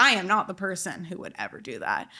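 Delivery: ordinary delivery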